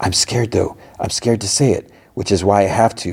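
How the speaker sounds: hushed stage whisper. Retelling a scene, voicing a woman's words as she half-whispers. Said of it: "she whispers".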